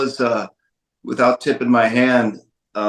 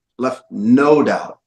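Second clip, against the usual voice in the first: very slow, NO repeated and leaned on.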